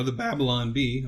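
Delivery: voice cracking. Starting to introduce him to the others, voice cracking. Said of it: "my voice cracked".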